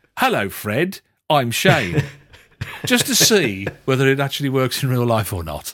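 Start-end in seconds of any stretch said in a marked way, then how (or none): 0.1-2.0 overly loud, slow, stilted, unnatural delivery. Speaker demonstrates walking up to people and greeting them, loud and unnatural. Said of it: "describing quite loudly everything that I'm doing in a very unnatural way".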